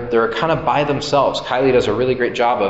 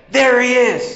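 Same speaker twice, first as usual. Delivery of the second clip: super excited, very high, thrilled voice; 12 semitones higher, 4 dB louder than usual. Retelling how Peter spotted someone and stood up, imitating Peter being super excited. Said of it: "Peter just like is super excited".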